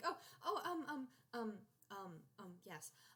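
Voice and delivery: flustered, caught-off-guard stammering and stumbling stutter. Voicing a flustered owl character answering a kiss on the hand: flustered stuttering. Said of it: "she's, like, stuttering".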